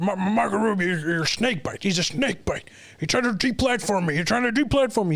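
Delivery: heckling, pitch up. Retelling Marco Rubio's press conference, the speaker imitates the heckler, screaming as Alex Jones. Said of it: "So he's screaming".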